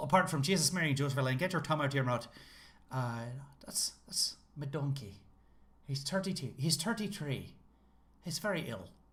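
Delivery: stock Irish accent, laid on thick, put-on. Showing the phrase they go to when doing an irish accent. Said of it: "there's a phrase when I'm doing an Irish accent".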